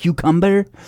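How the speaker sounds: put-on Spanish accent. Imitating how Alec Baldwin's wife talks on the Today Show: put-on Spanish accent. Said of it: "she has this huge accent".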